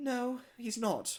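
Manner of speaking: put-on meek, timid, high, unsure tone. Retelling how Molly answered a question about Edward: imitating Molly's unconfident reply. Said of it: "she wouldn't say it with confidence".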